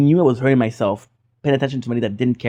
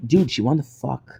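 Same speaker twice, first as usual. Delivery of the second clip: mock-angry, acted pissed-off shout; 4 dB quieter than usual. Retelling what a drunk friend screamed at him, imitating an angry friend. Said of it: "He was pissed off".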